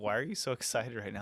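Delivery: ordinary talk, nothing marked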